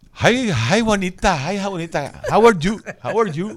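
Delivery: put-on New Jersey accent, high and loud. Acting out the psychiatrist greeting Juanita, as asked: imitating the psychiatrist's accent. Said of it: "con el acento".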